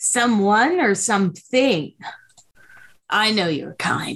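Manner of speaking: impatient voice, short on patience. Voicing a being answering visitors who came to grab a friend: impatient. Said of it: "Impatiently, it says".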